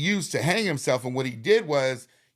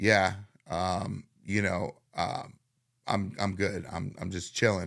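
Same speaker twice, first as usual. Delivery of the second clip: withdrawn, very low, quiet, halting, shut-off voice; 7 semitones lower, 6 dB quieter than usual. Retelling how he answered when asked if he was good, imitating a really quiet, shut-off reply. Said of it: "Really quiet, really shut off".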